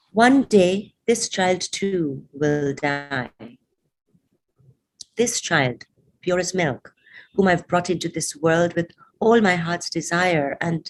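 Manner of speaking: ordinary delivery, nothing marked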